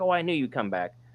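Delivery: high, mild mock yell.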